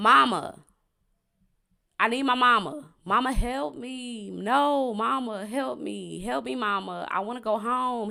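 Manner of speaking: high, drawn-out, distraught pleading scream. Retelling how Vincent screamed uncontrollably during questioning: imitating Vincent screaming for his mama. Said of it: "Vincent was screaming, quite literally, uncontrollably".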